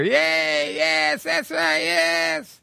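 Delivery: mock very high, very slow cheer, yes stretched. Retelling a debate where a crowd reacted to a speaker: imitating a cheering crowd. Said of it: "everybody would cheer".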